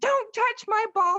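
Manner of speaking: mock, very high, shrill yell. Retelling a shouting match down the street: imitating someone yelling. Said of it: "we're yelling down the street".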